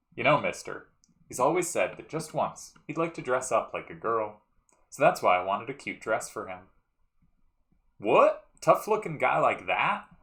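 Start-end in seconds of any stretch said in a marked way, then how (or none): 8.0-10.0 put-on raised, high-pitched elderly man voice. Reading game dialogue aloud, voicing the old man's reply, in an old man voice. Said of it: "every time I do old man's voice".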